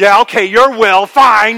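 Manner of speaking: loud, bitter, resentful. Illustrating different tones of submitting to someone's will: bitter resentment. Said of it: "the tone of bitter resentment".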